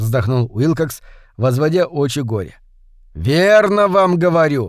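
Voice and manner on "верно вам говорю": insistent, pressing tone. [name] presses his point with Wilcox, who doubts him: insistent. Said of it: "настаивал Эванс".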